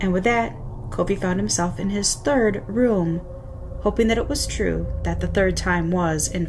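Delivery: plain reading voice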